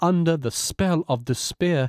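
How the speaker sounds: ordinary delivery, nothing marked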